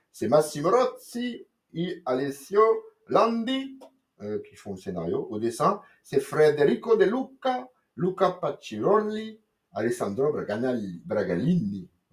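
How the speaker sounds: slow, clumsy, bad fake Italian accent. Reading out the Italian writers and artists of a comic, in a bad Italian accent. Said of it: "J'ai voulu me la péter accent".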